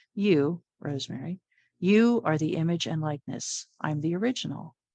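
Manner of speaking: ordinary delivery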